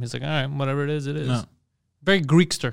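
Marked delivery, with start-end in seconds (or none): 0.2-1.3 mock flat monotone, quieter. Describing someone very calm, imitating his monotone voice. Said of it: "he's very like monotone".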